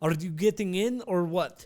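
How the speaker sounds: put-on Russian accent. Retelling what a man in the car asked about getting in; Russian accent. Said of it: "I gotta find my Russian accent real quick".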